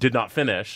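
ordinary talk, nothing marked

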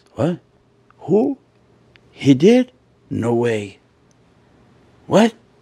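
hushed, quiet whispering. Acting out the gossip people start to hear, whispering.

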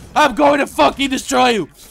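very loud, rough, raw, furious enraged shout. After announcing being pissed, angry shouting. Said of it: "I am fucking pissed".

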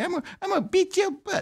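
very high, squeaky put-on voice. Joking about what Mike Tyson would say: Mike Tyson voice. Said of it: "that's a Mike Tyson joke".

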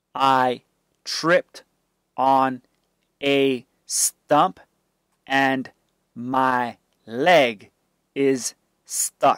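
ordinary delivery

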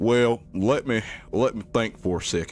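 put-on rural country farmer accent. Voicing a farmer asked about mimic activity, the speaker uses a country accent. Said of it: "I gotta say it with a country accent".

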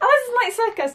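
very high and frantic.

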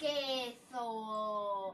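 loud, haughty, arrogant bark.

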